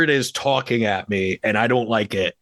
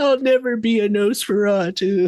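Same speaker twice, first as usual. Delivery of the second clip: mock sad voice, higher pitch; 9 semitones higher than usual. Repeating another speaker's sad line back: imitating a sad line. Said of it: "you sound so sad".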